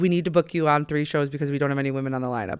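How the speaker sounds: normal talking voice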